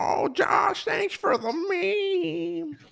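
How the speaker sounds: very high, creaky, slow, drawn-out squeaky character voice. Thanking someone for a meme in a Carl from Jimmy Neutron voice. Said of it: "I'm gonna do Carl the rest of the night".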